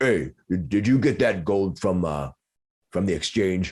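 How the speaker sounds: ogreish monster voice. Narrating a scene, the storyteller voices an ogre calling from the side hall, ogreish voice. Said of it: "you hear this ogre's ogreish voice".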